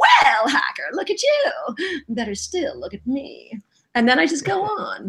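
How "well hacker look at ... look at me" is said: big, lively, swooping sing-song character voice. Showing the warm-up catchphrase line for a cartoon character: Wicked's catchphrase voice. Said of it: "I go".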